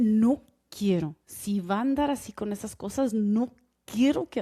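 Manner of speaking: enunciated through gritted, clenched teeth. Retelling how she scolded the speaker: imitating someone speaking through clenched teeth. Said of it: "when she was clenching her t-".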